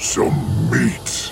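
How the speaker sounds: low, deep rumbling voice. Reading a story, the narrator voices the creatures' leader in a low, rumbling voice. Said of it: "their leader said in a low, rumbling voice".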